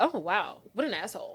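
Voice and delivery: mock breezy, offhand tone. Retelling how a character reacted to news: imitating someone unbothered. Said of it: "didn't seem that upset about it".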